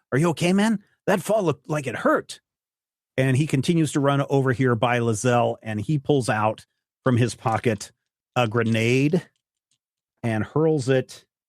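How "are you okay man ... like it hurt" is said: hushed whisper, higher and faster. Narrator voicing a character who runs past the listener: whispering. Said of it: "He whispers as he runs past you".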